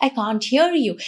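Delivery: plain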